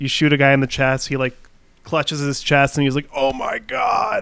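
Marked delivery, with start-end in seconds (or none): 3.1-4.2 cheesy, goofy dying cry, high and creaky. Describing a game's death animations, speaker imitates a shot guy: mock dying video-game soldier. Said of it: "that was a good impression of their voices".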